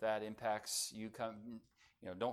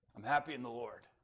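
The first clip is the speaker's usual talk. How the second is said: mock trembling, rough voice. The speaker retells a man's answer to a greeting, imitating Dr. Ouellette's shaky voice. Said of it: "His voice is a little shaky and a little rough".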